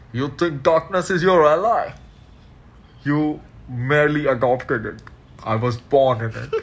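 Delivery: muffled voice spoken through cupped hands. Speaker quotes a movie villain with hands over his mouth, muffled Bane voice. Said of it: "if you heard a muffled voice right now".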